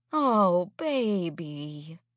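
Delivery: soothing, calming, consoling, comforting tone. Food Lady answers Hattie's story, in a soothing tone. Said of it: "she says in a soothing tone".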